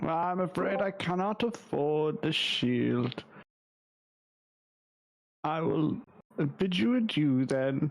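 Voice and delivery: sorrowful, crestfallen, sad voice. Playing a customer who cannot afford a shield: sad voice. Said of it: "You sound so sad".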